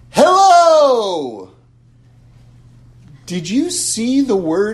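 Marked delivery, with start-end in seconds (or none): 0.1-1.5 very loud, long, drawn-out shout. Speaker yells a word to show that words are invisible: yelled "hello". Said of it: "I'm going to yell something".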